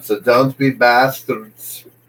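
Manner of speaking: tried-out, put-on Northern Irish accent. Chatting about UK accents with Dan, showing off a put-on Northern Irish accent. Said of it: "That's like my Northern Ireland accent".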